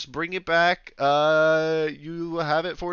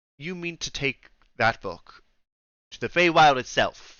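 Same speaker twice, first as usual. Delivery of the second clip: put-on severe, stern elderly woman voice; 2 semitones lower than usual. Voicing a librarian questioning a player's plan: stern old woman voice. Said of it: "stern, old-looking woman go, like".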